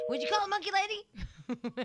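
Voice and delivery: play-acted shrill, very high scolding shout. Retelling being yelled at about calling the monkey lady: imitating Stench yelling. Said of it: "I got yelled at by Stench".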